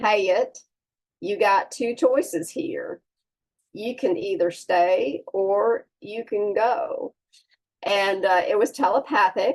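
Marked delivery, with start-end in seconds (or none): 0.0-7.1 put-on Memphis accent, one-syllable words stretched into two. Retelling what a deceased brother said during a near-death experience: Mark's Memphis accent. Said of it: "in his Memphis accent".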